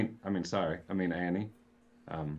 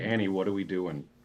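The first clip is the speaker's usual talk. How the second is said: ordinary talk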